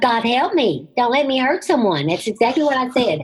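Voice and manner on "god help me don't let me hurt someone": high, loud scream. Speaker retells the car skidding on ice, retelling a scream. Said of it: "I just screamed out loud".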